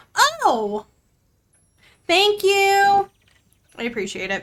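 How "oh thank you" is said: very high, swooping, drawn-out shouting. Thanking another player for finding a gift: shouting thanks. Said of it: "I'm shouting it at you".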